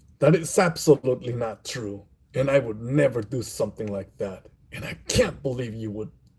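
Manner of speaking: combative, aggressive, hostile tone. Reading an example line to demonstrate the voice, aggressive, hostile delivery. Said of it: "Now that's Angie".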